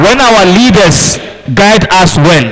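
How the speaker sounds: loud, slow, high, belted-out proclaiming voice.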